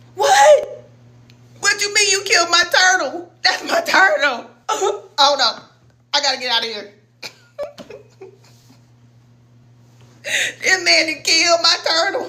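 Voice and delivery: mock talking through laughter, high, in disbelief. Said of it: "y'all know I'm laughing".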